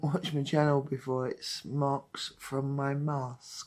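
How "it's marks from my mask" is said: very slow, deliberate, careful enunciation. Explaining to viewers what the marks on the face are: said slowly. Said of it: "I have to say that slowly".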